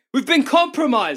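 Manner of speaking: alarmed screaming. Playing a character who runs to the militia HQ: screaming. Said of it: "I'd like to start screaming".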